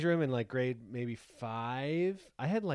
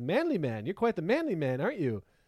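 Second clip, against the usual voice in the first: put-on sarcastic tone; 5 semitones higher, 4 dB louder than usual. Retelling what a man said to the speaker, imitating sarcastic tones. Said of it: "But it was like in very sarcastic tones".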